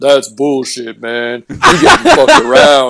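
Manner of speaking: loud, low-toned, swooping voice that rings out. Retelling a wrestler's reply to a complaint: Ron Simmons low voice. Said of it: "Ron Simmons with his low tone voice just going".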